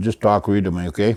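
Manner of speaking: ordinary delivery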